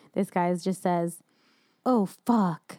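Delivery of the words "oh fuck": big, very dramatic, theatrical acting delivery. Quoting the first words spoken in a movie, in very dramatic acting. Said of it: "It's very dramatic".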